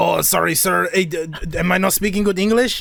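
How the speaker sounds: Spanish-accented English.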